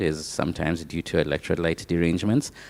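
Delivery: half-whispered, quiet aside. Adding an aside while explaining, then going on: half-whispering. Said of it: "said in a whispering sound".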